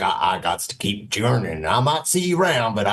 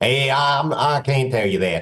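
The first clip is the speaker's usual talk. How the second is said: put-on robot voice, pitched higher; 4 semitones higher than usual. Voicing a robot refusing to name its boss: Victor robot voice. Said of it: "He's like".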